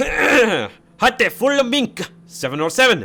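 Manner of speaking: very loud, shrill, high, fake German accent. Speaker saying an airport name while embracing his inner german, attempted german accent. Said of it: "I have to embrace my inner German right now".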